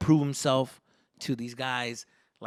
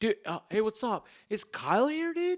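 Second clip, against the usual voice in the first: higher-pitched campus bro dude voice; 8 semitones higher than usual. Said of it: "That's what my voice and everything".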